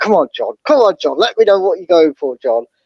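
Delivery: normal talking voice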